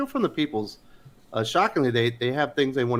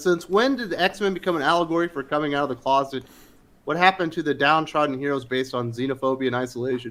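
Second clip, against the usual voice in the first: ordinary talk, nothing marked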